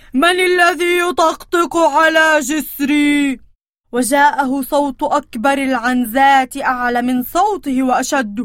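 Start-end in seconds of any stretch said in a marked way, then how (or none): 0.1-3.4 frightening, scary troll voice, shouted. Narrator reading a fairy tale, the troll challenging the goat on his bridge: troll shouting in scary voice. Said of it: "يصيح بصوت مخيف".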